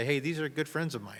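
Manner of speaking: normal talking voice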